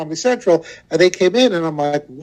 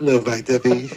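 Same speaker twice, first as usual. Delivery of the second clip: playful put-on whisper, lower; 5 semitones lower, 3 dB quieter than usual. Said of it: "my whole career is in whispering".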